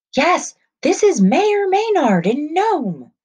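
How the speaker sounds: very high, shrill, loud shouting. A man shouts into an old telephone receiver while others watch; shouting. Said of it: "the man shouted into the receiver".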